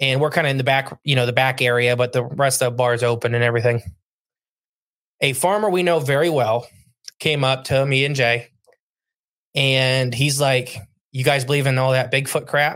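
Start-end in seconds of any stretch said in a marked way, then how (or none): none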